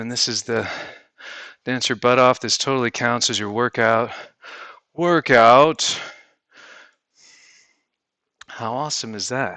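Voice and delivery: breathless, panting, out-of-breath speech. Introducing a dance workout video, out of breath. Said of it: "I just need to catch my breath".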